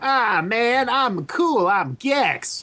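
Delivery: slow, high drawl. Comparing the game character's versions, imitating the American one: American Gex voice. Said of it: "It's like the American one is super".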